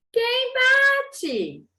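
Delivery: put-on very high, swooping little-old-lady granny voice. Reading a story aloud, the wolf inside the house: wolf imitating the old grandmother's voice. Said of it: "imitando a voz da velhinha".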